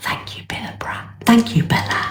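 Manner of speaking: hushed, secretive whisper. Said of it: "that's why I'm whispering".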